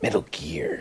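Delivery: hushed, breathy, breathed-out game-hero voice. Recalling Metal Gear Solid while discussing stealth in games: David Hayter impression. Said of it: "Were you just imitating David Hayter?".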